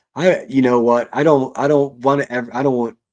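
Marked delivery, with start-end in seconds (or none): 1.1-3.0 stuttering, stammering, tripping over words. Speaker catches themself tripping over their words mid-sentence, stuttering. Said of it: "I'm stuttering".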